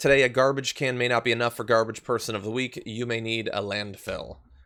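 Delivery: ordinary delivery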